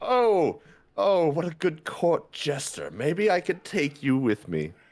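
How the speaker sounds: high voice, laughing while talking. Voicing a cloaked figure who laughs at a flipping player: laughing cloaked figure. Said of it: "The cloaked figure starts laughing".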